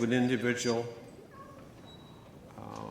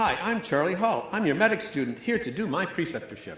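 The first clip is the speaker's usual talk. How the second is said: very eager, chipper, chirpy voice, pitched high. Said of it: "in a very eager, chipper voice".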